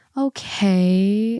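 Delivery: mock exasperated tone. Imitating how the other speaker answers feelings: imitating an exasperated okay. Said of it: "it just sounds like you're so exasperated with me".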